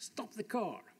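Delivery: put-on sudden, eager, urgent call, kept contained. Telling of spotting a boulder while driving up a valley, retelling a yell. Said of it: "I yelled in my best Italian".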